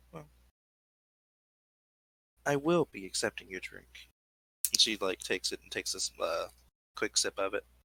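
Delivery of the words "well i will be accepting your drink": sultry, seductive come-hither purr. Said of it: "says in a somewhat low, like sultry voice".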